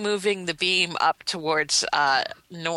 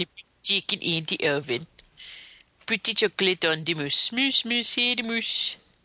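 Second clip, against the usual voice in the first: put-on mock-Swedish gibberish chef voice. Comparing a game's fake language to the Swedish Chef: Swedish Chef voice. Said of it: "it reminds me of the Swedish Chef".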